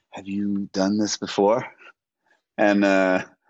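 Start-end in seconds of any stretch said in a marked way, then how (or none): 0.1-1.6 put-on whisper, lower in pitch. Retelling a co-star's question before their first kissing scene: imitating Uzo whispering. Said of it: "she whispered to me".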